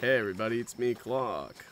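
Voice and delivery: imitated creaky vocal fry. Trying out the vocal fry voice being discussed: imitating vocal fry. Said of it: "I can't do that".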